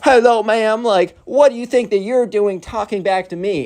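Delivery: condescending, talking-down woman's voice. Retelling a clash between two Karens, acting out one: imitating a Karen. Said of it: "she's like".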